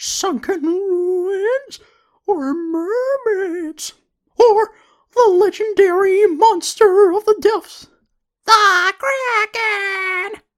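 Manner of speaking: high, loud, slow squeaky voice. Speaker performs a line from the cartoons as a Mickey Mouse voice. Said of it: "good Mickey Mouse impression".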